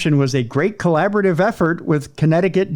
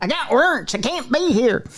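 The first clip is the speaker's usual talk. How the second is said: high, put-on bluegrass banjo-picker voice; 7 semitones higher than usual. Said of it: "I sounded like a bluegrass, uh, banjo picker".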